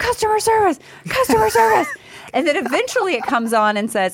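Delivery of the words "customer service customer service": mock screaming, very high-pitched and shrill. Retelling fighting the gas company's phone menu: retelling screaming. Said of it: "I start screaming".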